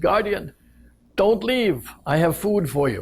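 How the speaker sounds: loud calling out. Retelling a story where a man calls out from a rock over the water, loud calling voice. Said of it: "as much as he can of a loud voice".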